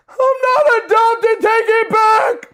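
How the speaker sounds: put-on very high, slow, drawn-out baby crying. Retelling being teased as a child: imitating own childhood crying. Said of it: "I'd start crying like a little baby".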